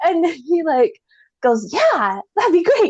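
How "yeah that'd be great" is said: play-acted cheerful, all-happy, pitched-up tone. Retelling the man's answer when offered a ride: imitating a happy man. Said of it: "swings over all happy".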